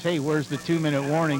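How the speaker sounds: ordinary delivery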